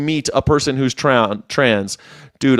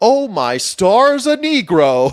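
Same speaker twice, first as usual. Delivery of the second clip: very high, very slow, swooping, awestruck, excited amazement; 10 semitones higher than usual. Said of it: "really excited 'cause he's never seen".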